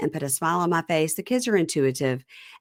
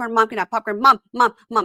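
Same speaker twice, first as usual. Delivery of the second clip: mock kids' screeching, higher and louder; 8 semitones higher, 5 dB louder than usual. Retelling kids nagging their mom for popcorn: imitating kids screeching. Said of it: "the kids are screeching about popcorn".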